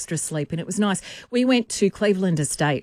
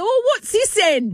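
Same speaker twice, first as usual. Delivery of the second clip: put-on English accent; 14 semitones higher, 3 dB louder than usual.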